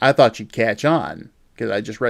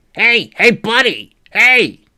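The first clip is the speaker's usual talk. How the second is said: very high, really nasally voice; 11 semitones higher, 6 dB louder than usual. Retelling a stranger calling out to them, imitating a nasally voice. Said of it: "I hear this really nasally voice".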